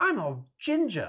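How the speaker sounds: very high-pitched character voice. Quoting the Tenth Doctor's line from the show: David Tennant accent. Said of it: "we gotta work on your David Tennant accent".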